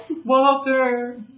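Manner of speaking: very high, ghostly calling voice of a woman. Retelling a voice heard off in the woods: woman's voice calling Walter. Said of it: "the voice of a woman saying".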